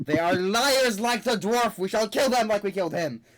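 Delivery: loud, high-pitched yelling shout. Game master voicing a character who senses the party's magic; shouting. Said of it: "as he shouts".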